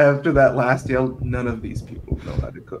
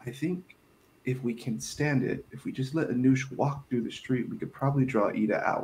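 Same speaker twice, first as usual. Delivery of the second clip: soft, hushed, kept-down quiet voice; 9 dB quieter than usual. Speaking in character, plotting with a companion so others won't hear: talking quietly. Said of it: "trying to talk quietly".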